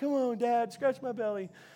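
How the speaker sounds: silly, playful, goofy dog voice. Telling how Cooper rolls over for belly scratches, the speaker does the Cooper voice. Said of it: "That's my Cooper voice".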